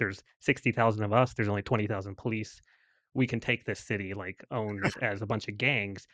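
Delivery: normal talking voice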